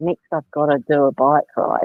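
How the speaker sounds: reluctant, dragging, dropped, flat tone. Showing how a negatively framed plan sounds: dropped tone, sounding like a chore. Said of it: "suddenly your tone drops, you sound like it's a chore".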